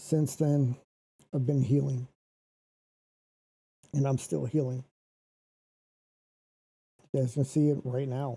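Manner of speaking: pushing through while holding back tears. Live streaming to viewers about still healing, holding back tears. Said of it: "I'm trying not to cry".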